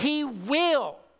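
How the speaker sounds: "will" stressed, with a falling close. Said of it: "not might".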